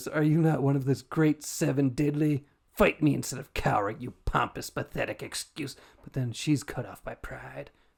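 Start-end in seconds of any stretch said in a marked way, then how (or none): 0.1-5.8 put-on angry voice. Retelling a game scene, voicing Fury: imitating an angry voice. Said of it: "Fury angrily says".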